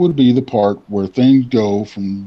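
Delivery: ordinary delivery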